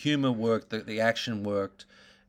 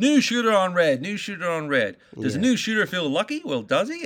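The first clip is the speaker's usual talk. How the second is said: put-on slight English accent, pitched up, called out; 8 semitones higher, 4 dB louder than usual. Retelling the movie's card dealer line, doing Scott Rosenberg's slight English accent. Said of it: "Scott's got a bit of an English accent to him".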